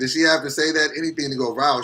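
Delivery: normal talking voice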